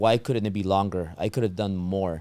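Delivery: plain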